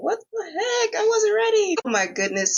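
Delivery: overcome with feeling, very high, swooping voice. Answering a question about highlights of the first season, getting emotional. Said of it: "getting emotional".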